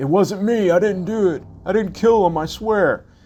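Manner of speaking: very high-pitched, loud, defensive tone. Retelling what Eddie says when found with a dead guy: imitating Eddie's defensive denial. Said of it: "all defensive, saying".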